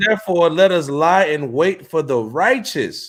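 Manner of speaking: ordinary talk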